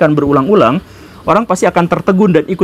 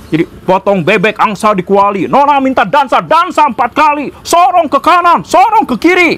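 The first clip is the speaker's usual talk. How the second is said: forceful, very high, declaiming rally-speech intonation; 9 semitones higher than usual. Show how Pak Karno's speeches stir even without their content, in a Pak Karno speech voice, strong intonation. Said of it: "video Pak Karno ketika dia berpidato ... dengan intonasi yang sekuat itu".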